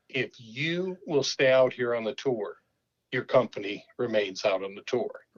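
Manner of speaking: plain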